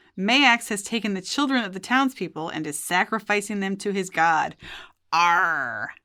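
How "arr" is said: drawn-out stock pirate cry, "arr" stretched. Saying a god's name that sounds like a pirate cry: pirate-voice 'Arr'. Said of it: "I have to say it that way. ... I have to do it pirate".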